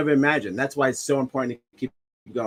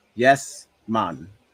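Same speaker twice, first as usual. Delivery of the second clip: put-on Jamaican accent; 3 semitones lower than usual. Agreeing with a motto, then showing off a jamaican accent. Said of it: "That's my uh, Jamaican uh, accent".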